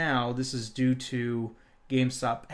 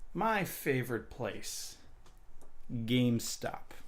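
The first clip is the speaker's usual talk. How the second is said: slow, breathy, half-whispered sarcastic delivery; 6 dB quieter than usual. Opening a story to listeners, sarcastic tone. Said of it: "Please note the sarcasm".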